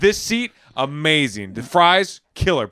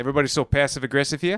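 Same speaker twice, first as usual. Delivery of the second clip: put-on New Zealand accent; 4 dB quieter than usual. Trying out different accents on the same line, new zealand accent.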